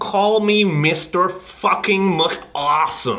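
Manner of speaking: very slow, high, put-on American accent. Given a sentence to Americanize: put-on American accent. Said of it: "give me a sentence to say, and I will Americanize it".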